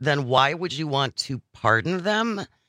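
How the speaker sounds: ordinary delivery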